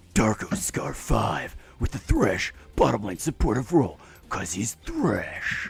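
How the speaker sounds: grim, hushed, breathy whisper. Announcing a player and role in the grimmest voice possible, a grim Batman voice. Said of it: "It's it's the Batman voice".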